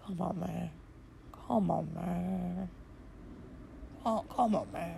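very hushed, soft, very slow murmur. Showing how he says it in a totally different tone from your own, Joe Biden impression. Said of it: "he says it in a totally different tone".

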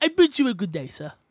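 playful put-on British accent. Joking around with a friend, switching into a put-on British accent. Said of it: "that was very British of you".

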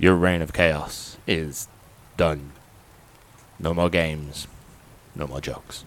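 electronic, mechanical voice filtered through a helmet. Retelling what a helmeted character says to the Joker: electronic helmet voice. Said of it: "he's got this kind of electronic voice through his helmet".

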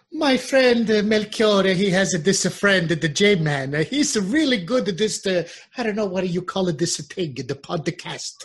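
put-on Italian woman voice. Doing the voice the co-host asked for, about a friend: Italian mother voice. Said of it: "say that I'm some fantastic podcaster in that mother's Italian voice for me".

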